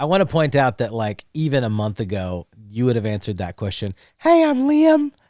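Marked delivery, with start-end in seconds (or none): 4.2-5.1 put-on very high, raised, unbroken boyish kid voice. Teasing a friend who is growing quickly, imitating Liam's old voice. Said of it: "your voice is dropping so fast".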